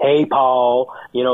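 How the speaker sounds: put-on Southern accent. Imitating alabama fans calling in to a show, southern drawl. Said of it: "like with that Southern drawl".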